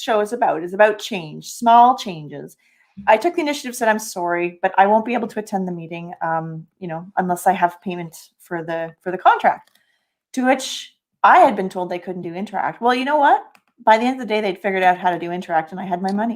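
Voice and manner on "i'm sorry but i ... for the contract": plain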